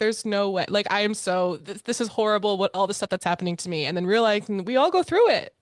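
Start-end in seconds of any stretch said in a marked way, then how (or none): none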